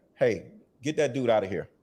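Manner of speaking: mimicked, acted-out whisper. Describing an old boss who summons somebody, mimicking his whisper. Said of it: "he whispers in his ear".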